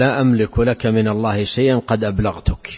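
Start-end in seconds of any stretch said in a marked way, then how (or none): none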